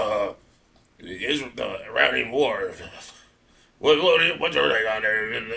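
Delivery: mock drained, deadened, lifeless flat voice. Imitating Alex Jones talking to Nick Fuentes: imitating Alex Jones sounding dead. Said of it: "he sounded so dead".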